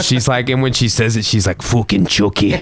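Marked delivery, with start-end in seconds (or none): 1.6-2.6 put-on furious little two-year-old child voice. Retelling a little girl's outburst, imitating an angry two-year-old. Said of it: "an angry little 2-year-old girl saying fucking Chucky".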